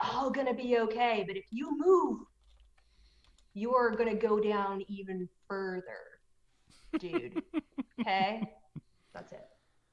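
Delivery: hushed whisper. Character holding a man down in a game scene, whispering in his ear. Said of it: "kind of whisper in his ear".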